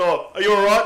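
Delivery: put-on Indian accent. Retelling what the train guard said, imitating the guard's accent. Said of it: "That is not how he said it".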